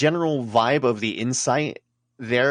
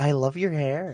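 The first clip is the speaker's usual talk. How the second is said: put-on female voice, higher; 3 semitones higher than usual. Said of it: "Just fake a woman's voice".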